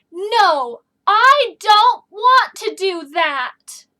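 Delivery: angry and forceful, very loud, very slow. Example of an excited sentence in a lesson, angrily excited. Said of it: "excited in an angry way".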